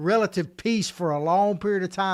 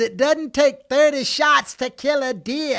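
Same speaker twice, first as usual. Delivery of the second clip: put-on New York accent, pitched up; 7 semitones higher, 4 dB louder than usual. Telling Ted what a possible next New York mayor says, in a put-on New York accent. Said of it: "my good New York accent".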